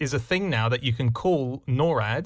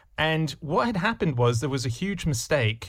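ordinary talk

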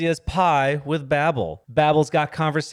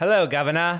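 English movie accent, put on. Asked to show an English accent for a movie: English accent. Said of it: "with an English accent? Let me hear it".

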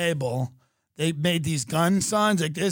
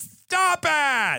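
put-on camp act, higher pitched; 10 semitones higher than usual.

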